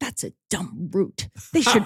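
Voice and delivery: put-on whispering voice. Retelling what mom said during football, imitating her whispering. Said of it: "she'd be whispering it".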